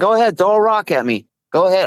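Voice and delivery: high-pitched, goading, defiant taunting yell. Speaker retelling how they taunted the rock throwers, retelling a yell. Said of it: "I was yelling at him".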